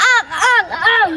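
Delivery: choked-up sobbing with stammering.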